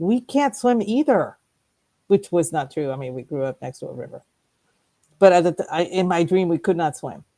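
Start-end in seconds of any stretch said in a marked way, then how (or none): 0.0-1.4 mock high, screaming yell. Retelling a dream, shouting at a sister in water: retelling a scream. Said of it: "screaming at her going".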